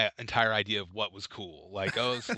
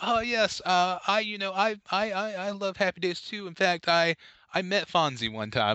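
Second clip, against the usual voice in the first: put-on young girl's vague British accent, pitched up; 10 semitones higher than usual. Retelling what a young girl at daycare said, imitating a British girl. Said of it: "in my memory is some kind of British".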